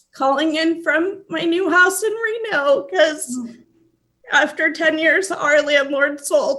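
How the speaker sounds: tearful crying voice, choking up. A host, calling in before welcoming a new executive director, speaks while crying. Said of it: "sorry to cry".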